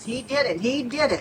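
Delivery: ordinary talk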